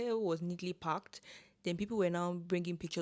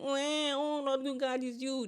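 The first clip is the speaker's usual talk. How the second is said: put-on high, drawn-out, whiny crying-baby wail; 8 semitones higher, 4 dB louder than usual. Speaker mocking how their people complain, imitating a crying baby. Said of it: "we sound like a crying baby".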